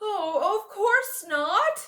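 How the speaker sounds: very high, deeply shocked exclamation. Narrator reads the bear's reply to Peter's warning, very shocked voice. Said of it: "said the bear in a very shocked voice".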